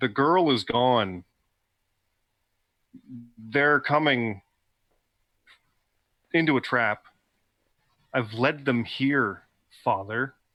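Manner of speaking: flat-out, direct, very blunt delivery. Character going all in with the ruse, telling father: very blunt. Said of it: "Very blunt".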